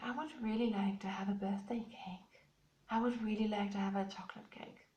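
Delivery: quiet, soft, hushed half-whisper. Retelling a bedtime request for a birthday cake: imitating a whisper. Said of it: "he kind of whispered".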